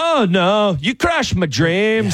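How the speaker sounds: put-on French accent, very high and slow. Retelling a man's reply after being told where it was, in his french voice. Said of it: "in his French voice of".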